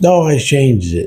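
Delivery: put-on high, drawn-out yelling. Telling a story, acting out the other girl at the building's far end, imitating someone yelling back. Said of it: "the other girl on the other end yells back".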